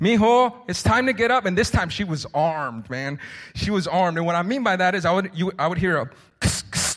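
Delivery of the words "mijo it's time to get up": normal talking voice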